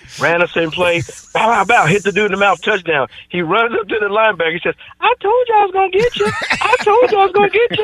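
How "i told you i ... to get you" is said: very high-pitched, piping voice. Retelling a player taunting a linebacker after a touchdown, in a high voice. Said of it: "he had a high voice".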